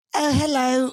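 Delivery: put-on elderly British woman's voice, very high. Asked for an impression, imitating an old British woman's voice. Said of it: "do an impression of it".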